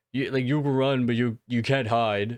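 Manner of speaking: put-on creepy low tone. Describing a man with a switchblade approaching a woman, imitating a creepy lowered voice. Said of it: "like this like creepy like tone".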